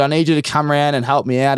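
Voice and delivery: ordinary talk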